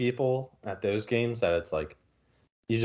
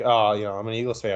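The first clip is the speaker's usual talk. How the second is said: normal talking voice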